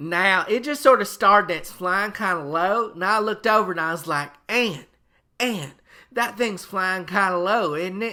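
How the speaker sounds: put-on very loud, high, small-town rural Georgia accent. The speaker acts out his stepfather talking on the news, imitating stepfather on the news. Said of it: "Now, my stepfather was different. / Uh, he was from Buford, Georgia, made it all the way through the eighth grade before he got kicked out of school for being ornery. / Uh, he was from Buford, Georgia".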